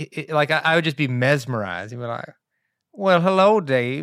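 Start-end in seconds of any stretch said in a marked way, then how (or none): 2.9-4.0 put-on slow Georgia southern accent, higher pitch. Act out a man welcoming Dave to the neighborhood, in Mr. Culpepper's slow, soothing Georgia accent. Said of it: "you do his accent".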